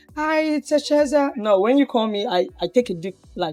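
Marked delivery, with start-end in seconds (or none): 0.2-1.4 affected, put-on high feminine voice. Showing the voice they avoid when answering calls, put-on feminine voice. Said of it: "I don't try to pull out the feminine voice".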